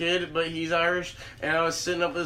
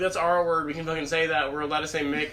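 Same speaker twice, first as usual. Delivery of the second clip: usual speaking voice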